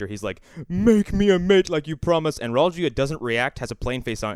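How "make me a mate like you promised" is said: raised, pitched-up, begging pleading voice. Retelling how the monster begs in the movie: imitating the monster pleading. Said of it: "pleading with".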